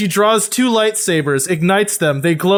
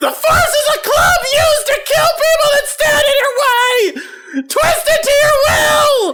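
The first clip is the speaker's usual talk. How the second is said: very high, fierce shouted voice. Voicing a character urging a player to use the Force: yelling. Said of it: "so he stops yelling".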